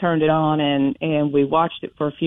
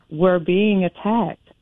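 whispered voice; 3 semitones higher than usual. Retelling a phone call where mom secretly says this: imitating mom whispering. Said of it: "she's whispering".

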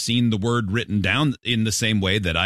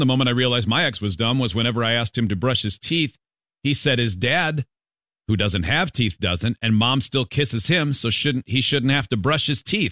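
usual speaking voice

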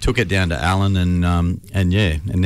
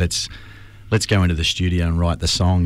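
ordinary delivery

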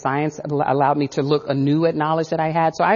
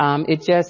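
usual speaking voice

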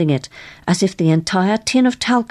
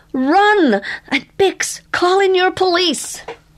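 very high, urgent, alarmed shout; 13 semitones higher than usual. Reading a story, the narrator voices Willie after the group stares in shock, shouting. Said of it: "Willie shouted".

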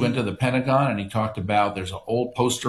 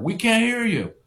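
tough, pitched-up New Yorker yelling; 11 semitones higher than usual. Retelling how the crowd shouted at the president: imitating New Yorkers shouting. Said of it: "And imagine a New Yorker".

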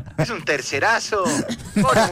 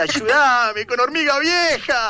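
put-on crying and yelling, much higher, slower; 7 semitones higher, 3 dB louder than usual. Retelling how someone pleaded for help, imitating crying and shouting. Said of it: "lloraba, gritaba".

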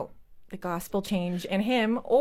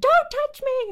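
put-on very high, shrill, loud screaming toddler tantrum; 7 dB louder than usual. Mother recalls her toddler on the floor refusing to be picked up, retelling a toddler's scream. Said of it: "He screamed".

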